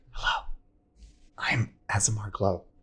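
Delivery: whispering. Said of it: "But you're whispering to her".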